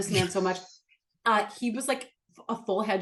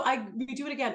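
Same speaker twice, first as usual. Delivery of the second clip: ordinary talk, nothing marked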